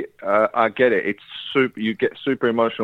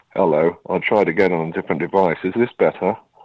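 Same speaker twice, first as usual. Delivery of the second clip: much deeper, lower voice; 4 semitones lower than usual. Calling back in on a different device: voice a lot deeper. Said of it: "why is your voice, like, a lot deeper?".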